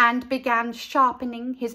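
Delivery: ordinary delivery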